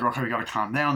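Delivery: normal talking voice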